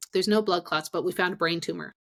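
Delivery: put-on offhand, matter-of-fact tone, fast and nonchalant. Retelling how he delivered her test results, imitating a nonchalant tone. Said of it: "he said it so nonchalantly".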